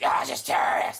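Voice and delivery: put-on monster voice. Redoing a line in another character voice: Killer Croc voice. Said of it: "that's my Killer Croc voice".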